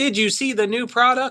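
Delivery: very high, mechanical robotic voice. Mocking the AI voices in videos they watch: imitating robotic AI voice. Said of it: "It's like a robot".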